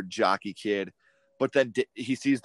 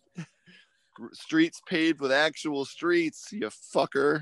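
put-on slow, high, drawn-out stoner drawl, dripping sarcasm; 7 semitones higher than usual. Quoting a movie character talking to Mordecai: sarcastic stoner voice as Marty. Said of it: "super sarcastic, smart-ass stoner".

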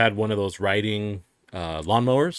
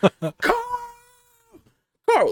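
frantic, very high, swooping yell. Telling a story, the speaker reenacts calling for the neighbor: retelling a yell for Carl. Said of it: "Starts yelling".

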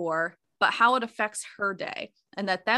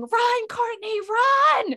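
put-on very high shriek, "run" drawn out; 14 semitones higher, 5 dB louder than usual. Retelling a friend's outburst while a child vomited: imitating someone screaming. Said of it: "started screaming".

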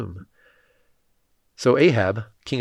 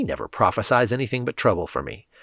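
ordinary delivery

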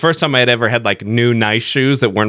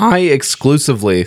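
voice cracks, higher pitch; 3 semitones higher than usual. Talking about car problems in a group conversation, mid-sentence: voice crack. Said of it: "That was a cool voice crack".

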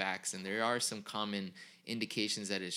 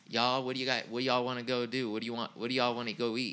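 put-on Southern Georgia accent; 3 semitones higher, 4 dB louder than usual. Retelling how a cousin from georgia kept saying y'all: imitating a cousin from georgia. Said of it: "her cousin said "y'all" about five hundred times".

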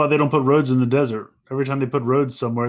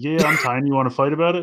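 put-on drunk man voice, higher; 2 semitones higher than usual. Two speakers joking about a favorite character, doing Cliff Jumper as a drunk dude. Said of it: "like a little, like, drunk dude. He's like".

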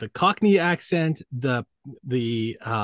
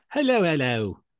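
put-on British accent; 3 semitones higher than usual. Greeting the co-host at the start of an episode: put-on British accent. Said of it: "Very British today".

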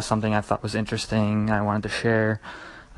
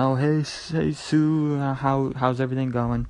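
play-acted cheerful, friendly, drawn-out hail; 3 semitones higher than usual. Retelling a friendly guy calling out to the person making his coffee, imitating a friendly yell. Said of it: "and then he's yelling".

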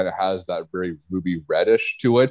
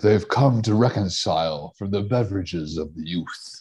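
put-on movie trailer announcer voice. On a beer podcast, doing a bit in the movie trailer guy voice. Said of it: "the trailer guy".

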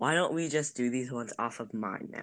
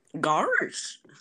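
put-on cartoon dog voice, higher and louder; 5 semitones higher, 7 dB louder than usual. Doing an impression the other speaker asked for: Goofy voice. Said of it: "that did not sound like him".

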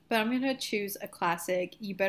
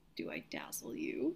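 mock sincere, slow, earnest, dead-serious delivery; 9 dB quieter than usual. Imagining the line said in earnest: Edward saying it seriously. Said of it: "Could you imagine if he was serious?".

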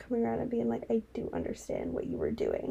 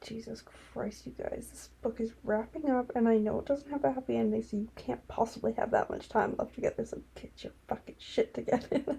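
ordinary delivery

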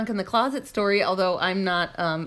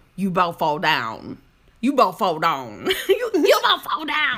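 weird, swooping rural farmhand voice; 4 dB louder than usual. Retelling what the 9-year-old Odie says to Rex: imitating Odie's weird farm voice. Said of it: "He says it really weird, like he's like down on the farm or something".

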